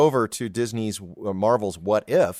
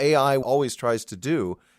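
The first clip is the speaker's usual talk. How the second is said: ordinary talk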